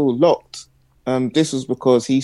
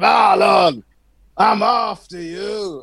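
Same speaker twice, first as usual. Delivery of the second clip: high, very slow, stretched-out, drawn-out delivery; 7 semitones higher than usual. Retelling a kid's threat on the road: imitating Fat Dwayne's deep voice. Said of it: "He's a kid with a deep voice".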